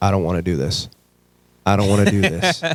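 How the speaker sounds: acted hard bawling, tearful, through the words. Retelling the first day of football practice, imitating own past bawling. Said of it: "I fucking start bawling, crying".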